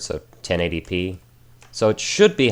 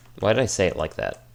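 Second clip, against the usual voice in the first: plain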